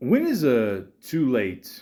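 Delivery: slow Italian accent with wide pitch range.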